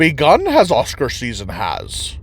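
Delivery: horrible, slow, swooping sing-song voice, bad on purpose. Wrapping up a film verdict with a horrible Yoda impersonation. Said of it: "horrible, horrible impersonation of Yoda".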